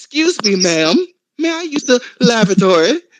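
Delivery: prim, overly proper, extra-polite, slow and high. Retelling a visit to a friend's house: imitating his own proper talk. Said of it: "I'm all proper and shit".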